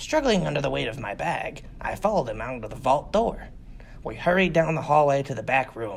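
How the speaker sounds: ordinary delivery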